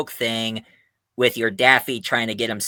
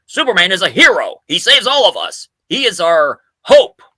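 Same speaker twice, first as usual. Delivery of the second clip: loud, swooping, big, bright, friendly boss voice; 8 semitones higher, 8 dB louder than usual. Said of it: "but make him more friendlier by saying".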